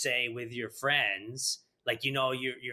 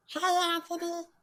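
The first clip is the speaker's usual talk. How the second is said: put-on very high-pitched cartoon kid voice. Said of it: "I can do, um, Bobby's World".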